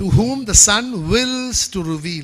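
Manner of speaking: slow delivery, strong stress on whom.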